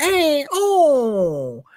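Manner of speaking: put-on very high-pitched, over-the-top, swooping Italian accent caricature. Describing a comedian's voices, imitating his exaggerated italian impersonation. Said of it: "he's like doing an Italian impersonation".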